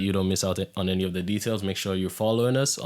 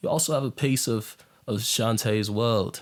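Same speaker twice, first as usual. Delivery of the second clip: fake British accent, tried on; 2 semitones higher than usual. Promoting shantaye's world to viewers in england, switching to a put-on british accent. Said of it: "Let me change my accent".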